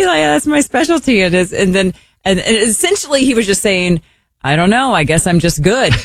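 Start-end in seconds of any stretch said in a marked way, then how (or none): 0.0-1.2 put-on Norwegian accent, much higher, slower. Retelling how a man answered a compliment, in a norwegian accent. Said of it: "this is [name]'s Norwegian accent".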